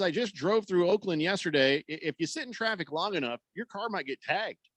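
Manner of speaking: normal talking voice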